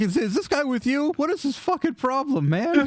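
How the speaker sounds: very high, appalled, mortified goblin voice. Voicing a mortified goblin asking about his attacker: mortified goblin voice. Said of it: "the goblin is absolutely mortified".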